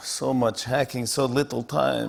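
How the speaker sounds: put-on Russian accent. Quoting one man during a monologue, Russian accent. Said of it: "[ Russian accent ]".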